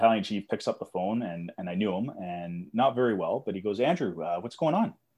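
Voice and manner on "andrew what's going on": bright, cheery, super happy, pitched-up voice. Retelling the battalion chief answering his call at 2:30 a.m., imitating a super happy voice. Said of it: "Super happy voice, like just upbeat".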